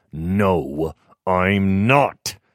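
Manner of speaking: muttering through clenched teeth. Jonathan answers Rourke's repeated question; muttered through gritted teeth. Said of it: "Jonathan muttered through gritted teeth".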